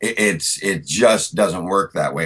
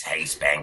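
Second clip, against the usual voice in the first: put-on croaky kid voice, quieter; 3 semitones lower, 7 dB quieter than usual. Speaker recalling school kids calling him Froggy, showing how he sounded: Froggy voice. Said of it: "Froggy was a character ... that talk like this".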